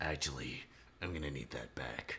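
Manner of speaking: very low, deep-pitched character voice. Voicing Medbor asking the naval officer for the axe back: Medbor's voice. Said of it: "I need him to have that voice".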